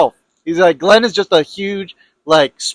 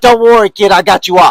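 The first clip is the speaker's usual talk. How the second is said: put-on mobster voice, louder; 6 dB louder than usual. Joking with a co-speaker about someone's mob lawyer, imitating a mob lawyer. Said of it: "this little greasy Italian".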